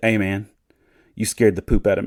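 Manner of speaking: put-on deadpan, dead-serious delivery. Retelling what a driver said after being startled: imitating a deadpan delivery. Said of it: "he said it the most deadpan, so serious".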